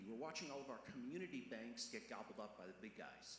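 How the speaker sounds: community stressed hard with a falling tune.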